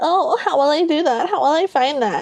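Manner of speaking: high, whiny, mocking, helpless-sounding whine. Retelling how a character mimics a woman mockingly: imitating a mocking whiny voice. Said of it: "he starts to mimic her mockingly".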